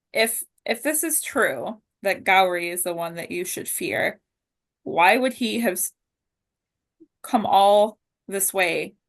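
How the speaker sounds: ordinary delivery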